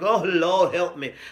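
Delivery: put-on, distraught, despairing, pleading mother voice. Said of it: "that mama that's like".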